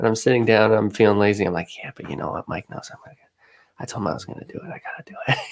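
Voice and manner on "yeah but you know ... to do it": very soft whisper under the breath.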